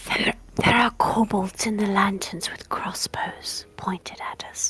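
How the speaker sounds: hushed, close, acted whisper. Speaking in character into a companion's ear, whispering. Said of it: "leans forward and whispers in Yelena's ear".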